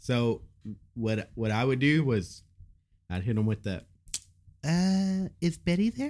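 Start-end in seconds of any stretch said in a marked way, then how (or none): 4.7-6.1 put-on scared, high, feigned girlish voice. Retelling how he called a girl's house phone: imitating his own past girl voice. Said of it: "try to have that, that girl voice".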